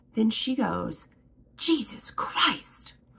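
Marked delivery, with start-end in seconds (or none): 1.6-3.0 high, harsh, cutting exclamation. Retelling a doctor's office worker's reply on the phone: imitating a harsh tone. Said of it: "harsh tone".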